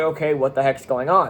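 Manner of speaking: ordinary delivery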